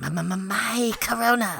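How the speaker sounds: creepy put-on voice, high, very slow, drawn out. Imagining Gollum drinking Coronas, saying his line in a Crypt Keeper voice. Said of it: "I don't know why I made him the Crypt Keeper".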